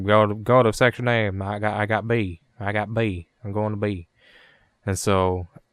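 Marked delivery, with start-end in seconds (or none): 0.0-4.1 put-on slow, older southern man's drawl, around fifty. Player retells a voice-chat teammate giving directions, in a fifty-year-old southern dude voice. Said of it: "He sounds like a fucking fifty-year-old southern dude".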